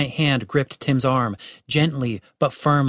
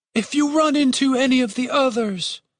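tired, worn, weary voice, very high-pitched; 11 semitones higher than usual. The head speaks to the group, wearily. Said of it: "the head said wearily".

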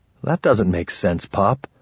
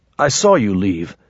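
plain reading voice

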